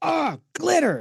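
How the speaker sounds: high, slow, drawn-out mock yell of disgust. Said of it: "I will literally yell".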